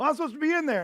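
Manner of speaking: very high, shrill, furious, angry shout. Retelling how a man yelled at an attendant: imitating a furious yell. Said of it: "he is furious with her".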